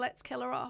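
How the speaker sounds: ordinary talk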